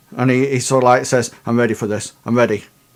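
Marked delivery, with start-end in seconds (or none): 1.5-2.6 mock jittery, fast, nervous delivery. Retelling what a man said as he grew nervous: imitating a nervous man. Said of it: "physically starts to get a little bit more, um, nervous".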